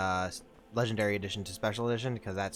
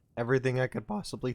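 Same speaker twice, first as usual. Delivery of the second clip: cracking, breaking voice; 3 semitones higher than usual. Addressing a companion, the speaker goes on, voice cracking. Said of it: "excuse my voice crack".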